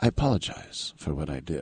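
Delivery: mild, soft, gentle, very proper and polite delivery. Acting out how he apologized for giving up the sack, imitating someone very gentle and proper. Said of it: "He was just very gentle and very proper".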